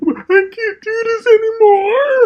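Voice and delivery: acted fake sobbing, very high, slow and drawn-out. Mocking a character crying to Nick: mock crying. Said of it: "cry her little phony tears".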